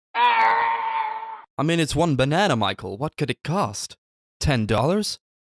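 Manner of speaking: bad put-on American accent, high, swooping, slow, drawn out. Paying tribute to the late Jessica Walter: bad American accent as Jessica Walter. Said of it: "That was a terrible American accent".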